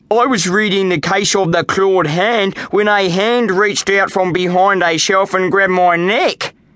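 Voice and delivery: put-on child's complaining, griping voice. A child at the library desk tells the librarian what happened, complaining. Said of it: "complained Jacob".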